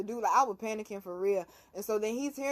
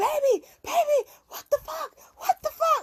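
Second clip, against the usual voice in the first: mock frantic panicked scream, high-pitched; 4 dB louder than usual. Retelling a car spinning out, imitating someone screaming. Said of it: "And the whole time he's screaming".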